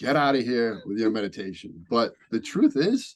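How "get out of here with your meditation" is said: put-on broad, thick Boston accent, laid on, dropped r's. Imitating police telling the meditation teachers to leave: Boston accent. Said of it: "I love the Boston accent".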